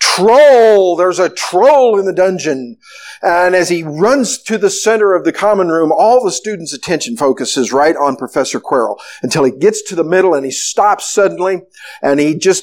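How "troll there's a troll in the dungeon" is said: plain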